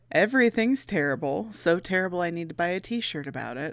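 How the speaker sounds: usual speaking voice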